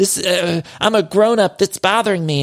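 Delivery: weepy, upset, tearful crying protest. Retelling a reality show scene where a cast member cries over makeup: imitating someone crying. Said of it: "crying. She's like".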